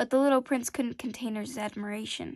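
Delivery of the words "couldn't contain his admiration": ordinary delivery, nothing marked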